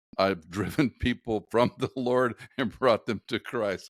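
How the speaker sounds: words spoken through laughter. Speaker reading aloud a list of personal statements: laughing while speaking. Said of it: "Sorry, I'm laughing".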